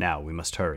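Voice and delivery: plain reading voice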